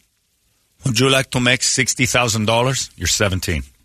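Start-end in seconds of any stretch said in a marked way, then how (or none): 0.8-2.9 put-on Mexican accent, pitched up a bit. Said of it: "Man, same man, this accent".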